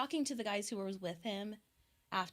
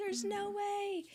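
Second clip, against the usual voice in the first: mock scream, higher pitch; 11 semitones higher than usual. Retelling hearing news from a doctor and jumping up: retelling her own scream. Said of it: "and I screamed".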